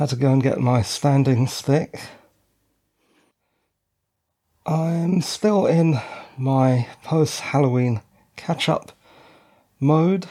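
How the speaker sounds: breathless, panting. Recording on the shore, back after stepping away, still out of breath. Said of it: "even more out of breath now".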